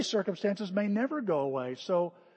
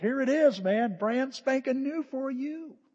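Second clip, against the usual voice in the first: cheery, friendly voice, pitched up; 5 semitones higher than usual. Acting out God as a storekeeper offering something new: friendly storekeeper voice. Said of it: "kinda like a storekeeper going".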